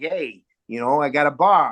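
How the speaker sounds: put-on Philadelphia accent. Recalling his dad role in the play Over the Tavern, Philadelphia accent. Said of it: "he had a Philadelphia accent".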